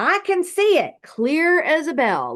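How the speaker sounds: put-on, very high, swooping, drawn-out sing-song shout. Retelling his dad reaching up and starting to shout: imitating his dad shouting. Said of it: "he starts shouting".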